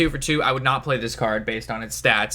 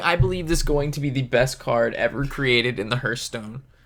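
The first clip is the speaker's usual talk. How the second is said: usual speaking voice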